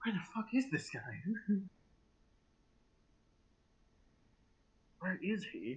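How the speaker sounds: quiet, high muttering under the breath. Narrating a game scene, voicing a knocked-down character, muttered under his breath. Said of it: "he says quietly under his breath".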